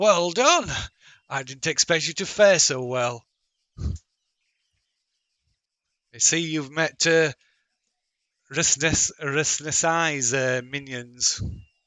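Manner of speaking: proclaiming voice calling out from afar. Voicing a voice that booms out through the trees: Dyson's booming voice. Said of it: "a voice booms out".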